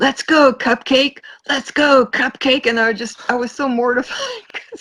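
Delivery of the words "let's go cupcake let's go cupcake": mock drawn-out drunken bellow at top of lungs. Retelling how a drunk young man yelled at the speaker, retelling a shout at top of lungs. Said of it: "like shouting the top of his lungs".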